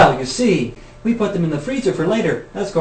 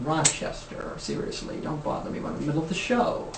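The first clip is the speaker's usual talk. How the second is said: soft, whispered impression of a voice. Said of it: "do my Jack Benny impersonation".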